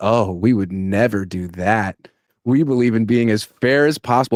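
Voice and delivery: acted-out, low, super-sarcastic, tongue-in-cheek tone. Retelling how someone answered a question about sign stealing; mock super-sarcastic. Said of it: "he said in this super sarcastic way".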